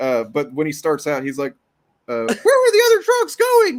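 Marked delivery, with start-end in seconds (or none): 2.3-3.8 shrill, very high-pitched, very loud bat voice. Retelling a comedy video of Batman trying out voices: imitating Batman's high-pitched bat voice. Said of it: "I'm doing a bat, high-pitched bat".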